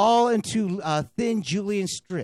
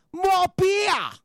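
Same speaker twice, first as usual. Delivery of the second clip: amateur put-on Australian accent, pitched a bit high; 12 semitones higher, 3 dB louder than usual. Trying out a practised accent and asking if it sounds right: attempted Australian accent. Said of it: "working on a little bit of my Australian speech".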